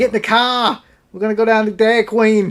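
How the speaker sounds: relaxed everyday talking. Imitating how a friend talks when heading to Dairy Queen: imitating Garrett's way of talking. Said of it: "However it is that he talks".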